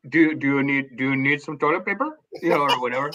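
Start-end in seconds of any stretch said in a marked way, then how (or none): 0.1-2.1 put-on Indian accent. Recounting using a public restroom, speaking in an imitated indian accent. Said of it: "That's my Indian accent".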